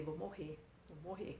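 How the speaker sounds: very soft faint murmur fading almost to nothing.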